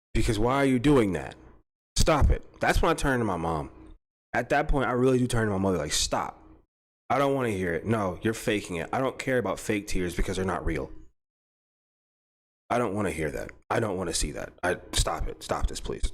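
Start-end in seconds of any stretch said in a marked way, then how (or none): 6.0-16.1 put-on cold, flat, emotionless robotic voice. Retelling what the speaker says to their mother: imitating own emotionless robotic tone. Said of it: "I become a complete robot".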